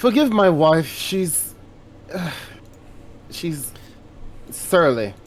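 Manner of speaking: sighed, put-upon voice. Voicing a character excusing his wife to the guards: sighing while speaking. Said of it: "sigh and say".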